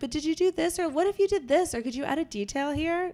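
high, eager, coaxing voice.

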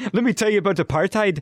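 put-on botched Irish-sounding accent. Joining a group's accent bit, in an accent that came out Irish. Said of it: "That was Irish".

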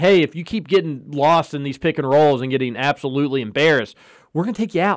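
ordinary talk

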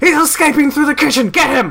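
put-on alarmed cook yell, very high. Playing a game, impersonating the cook while yelling: yelled put-on cook voice. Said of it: "in my best impression of the cook, I yell".

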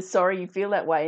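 ordinary delivery

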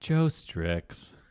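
soft, utterly sorrowful, mournful little creature voice. Imagining Pikachu conveying sadness by saying its own name: imitating deeply sad Pikachu. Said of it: "trying to convey ultimate sadness by just saying its own name".

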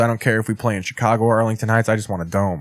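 very sarcastic, joking, rattled-off toss-off, acted out. Retelling his answer after he was asked about the cold, retelling a sarcastic remark. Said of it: "in a very sarcastic manner".

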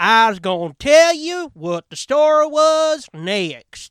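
very loud, slow Southern news-anchor delivery. Mocking Southern news anchors who put on a newscaster voice: Southern newscaster affectation. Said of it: "hear people from the South, and they do it too".

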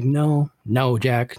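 put-on stern, strict, no-nonsense firm voice. Retelling how the grandmother answered her sick husband's plea, imitating Helen's stern refusal. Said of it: "very sternly be like".

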